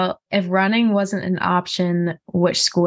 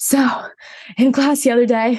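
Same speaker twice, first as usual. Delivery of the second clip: mock panting, breathless, pitched-up chatter; 5 semitones higher than usual. Describing chatting while running up hills, imitating out-of-breath talk. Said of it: "you're just like out of breath conversations".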